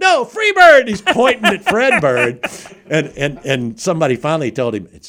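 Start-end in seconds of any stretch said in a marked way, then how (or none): 0.0-0.9 put-on insistent yell, much higher and louder. Retelling a guy who kept yelling Freebird, imitating his insistent yell. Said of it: "this guy starts yelling".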